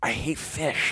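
whispered, breathy comedian-style voice. Describing a comedian's act, imitating Jim Gaffigan. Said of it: "he's like".

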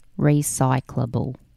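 said very slowly. Asked to say a word again very slowly, the speaker says it very slowly. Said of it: "say it again very slowly".

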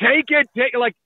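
insistent screaming. Picturing an agent hearing a sixty million offer: imitating an agent screaming. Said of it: "is Hannafin's agent not screaming".

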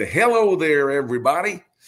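put-on high-pitched, warm voice with Southern accent. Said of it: "little Southern accent ... big smile in his voice".

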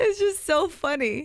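very slow, high speech bubbling with laughter. Reacting to another speaker's injury story, laughing while talking. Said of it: "I'm laughing so hard".

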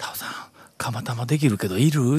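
mock hushed whisper. Retelling what the owner said from across the counter, imitating someone whispering. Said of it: "ひそひそ声で".

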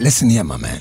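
voice dropped suddenly, very low and deep. Starting to give a young man dating advice: suddenly deep voice. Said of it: "Why do you go deep now?".

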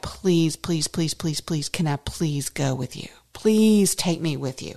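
desperate, imploring, begging plea, repeated over and over. Acting out what a healed man said to Jesus, imitating desperate pleading. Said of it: "was imploring, begging, pleading".

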